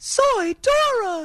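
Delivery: put-on very high cartoon girl voice. Offering to show the group how a cartoon character sounds, Dora the Explorer voice. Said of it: "You want me to do it for you?".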